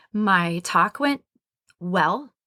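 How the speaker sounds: went well with rising, question-like intonation. Recalling a speaking engagement, saying it went well with rising, question-like intonation. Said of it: "I sounded like maybe a question mark".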